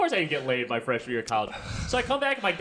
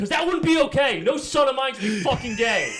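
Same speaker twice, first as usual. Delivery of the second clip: put-on New Jersey accent, higher and louder; 7 semitones higher, 5 dB louder than usual. Retelling a father's words to his son: imitating dad with New Jersey accent. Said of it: "I also gave him a New Jersey accent".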